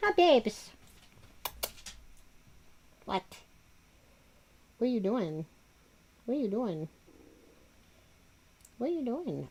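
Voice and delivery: put-on soft, sing-song baby talk. Speaker shows how to talk to bully-breed dogs: baby talk to a dog. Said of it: "you have to use like the baby talk".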